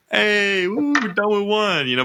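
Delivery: put-on sarcastic cheerfulness. Speaker acting out what people say in group workouts, mock sarcastic cheer. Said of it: "but it's usually sarcastic".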